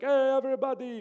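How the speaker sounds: put-on Arabic-accented speech.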